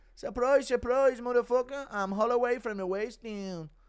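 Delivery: very high put-on voice, pushed very high. Announcing an impression, then performing it: Conor McGregor impression. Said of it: "Impression of McGregor".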